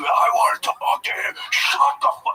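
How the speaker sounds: furious, hot-tempered angry outburst. Retelling a biker who went off on restaurant staff: imitating an angry biker. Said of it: "The anger".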